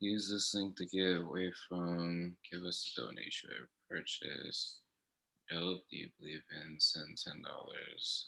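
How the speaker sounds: muttered under the breath, very soft, indistinct. Speaker reading links aloud while a co-host listens, mumbling. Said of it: "You're mumbling".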